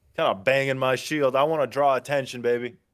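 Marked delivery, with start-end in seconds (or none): none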